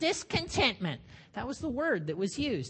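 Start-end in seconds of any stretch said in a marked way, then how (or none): 0.0-1.0 high, grumpy, crotchety grumble. Giving the word used in the olden days: crotchety voice. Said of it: "You have to say it kind of in a crotchety voice".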